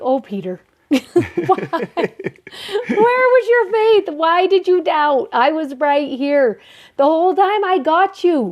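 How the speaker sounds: mock gentle laughter throughout, light and high-pitched. Imagining the words said while lifting someone up, with a little laughter. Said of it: "just this little bit of laughter that he's just like".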